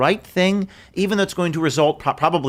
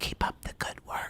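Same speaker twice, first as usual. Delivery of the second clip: hushed, barely voiced whisper under the breath. Retelling what a guy told him after checking his ID, whispering. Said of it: "Why are you whispering?".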